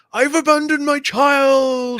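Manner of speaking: very high-pitched, shrieked, drawn-out, long scream. Retelling a random guy at a tournament yelling during a broadcast, imitating a guy screaming. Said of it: "just a guy randomly screams".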